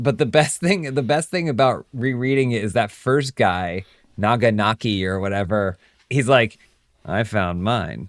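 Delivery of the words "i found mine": pleased-with-himself, smug, self-satisfied boastful tone. Retelling a story character's claim about his hole: imitating a smug character. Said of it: "really smug about it".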